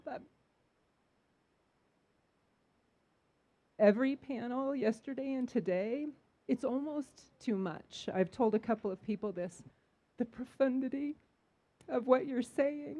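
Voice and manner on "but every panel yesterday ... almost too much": emotional voice welling up, tearful. A vendor speaking up to the panel from the audience, getting emotional. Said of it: "Sorry, I'm getting emotional".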